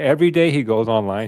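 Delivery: plain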